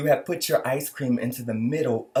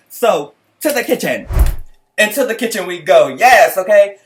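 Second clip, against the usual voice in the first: high, very loud screaming into the mic; 7 semitones higher, 9 dB louder than usual. A host heading to the kitchen during a recap: screaming. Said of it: "Sorry for screaming".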